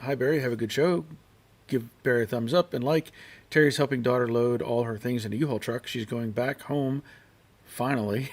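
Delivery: ordinary talk, nothing marked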